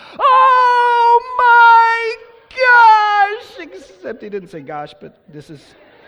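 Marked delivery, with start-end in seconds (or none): 0.2-3.7 shrill, very loud, drawn-out high scream. Retelling what he screamed when the rocket went upside down, imitating his screaming. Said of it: "he just starts screaming".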